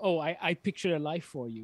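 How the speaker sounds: ordinary delivery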